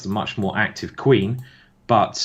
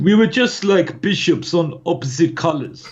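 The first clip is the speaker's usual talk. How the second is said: put-on Russian accent, pitched up; 8 semitones higher, 4 dB louder than usual. Quoting how he explained his divorce, in a Russian accent. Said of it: "I'll try to do a Russian accent".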